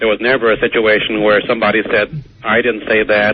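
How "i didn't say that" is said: ordinary talk, nothing marked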